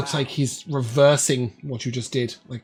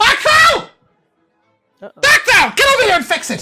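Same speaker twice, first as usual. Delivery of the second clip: loud exclaiming, much higher and louder; 7 dB louder than usual. Storyteller voices the lady Stelline after her fountain cracks: Stelline exclaiming loudly. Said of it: "she will exclaim quite loudly".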